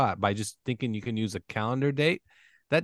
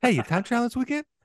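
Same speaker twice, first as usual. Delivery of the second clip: put-on Boston tough-guy voice, pitched higher; 11 semitones higher, 3 dB louder than usual. Repeating another speaker's question, imitating it: Mark Wahlberg voice. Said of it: "you said it like Mark Wahlberg".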